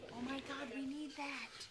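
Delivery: very quiet, slow stage whisper. Retaking a line after being asked to try it as a stage whisper. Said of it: "Try to stage whisper".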